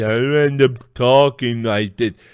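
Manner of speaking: relaxed-jaw talking. Describing how a muscle relaxant relaxes the jaw, showing slack-jawed talking. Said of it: "makes the jaw relax".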